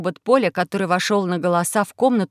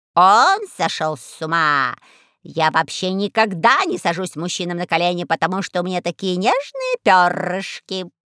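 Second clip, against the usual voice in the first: ordinary delivery, nothing marked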